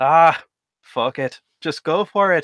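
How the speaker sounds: tipsy, drunk man voice, put-on Scottish accent. Describing the inner voice that cheers them on, in a drunk Scottish man voice. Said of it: "a Scottish man after about five rounds of drink".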